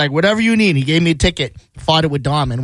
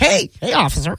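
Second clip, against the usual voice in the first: put-on voice, much higher in pitch; 8 semitones higher than usual. Teasing the other speaker about how he talked to an officer: put-on whiter voice. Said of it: "put on like a whiter voice".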